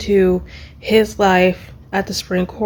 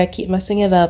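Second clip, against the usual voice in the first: ordinary delivery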